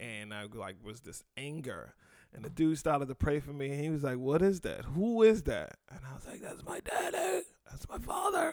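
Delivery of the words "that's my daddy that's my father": breathy, demented, unhinged whispered voice. Retelling answering a man who prayed over them, imitating a demented voice. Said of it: "You sound demented like that?".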